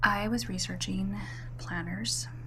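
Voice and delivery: hushed, really quiet whisper.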